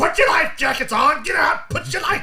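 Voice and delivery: very high, shrill, loud barked shouting. Retelling how the poor passengers were told to put life jackets on: imitating someone yelling. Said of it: "He's like yelling and screaming at them".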